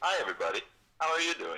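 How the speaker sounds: forced, unnatural, artificial high-pitched voice. On speakerphone, greeting everybody listening, with an artificial-sounding greeting. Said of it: "That sounds so artificial".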